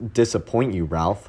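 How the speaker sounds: plain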